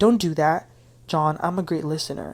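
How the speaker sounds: usual speaking voice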